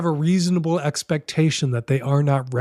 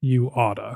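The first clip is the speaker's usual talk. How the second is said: put-on doubtful, unconvinced tone; 2 semitones lower, 3 dB quieter than usual. Repeating own advice about telling a partner: imitating a doubtful "you oughta". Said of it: "with a certain tone in his voice".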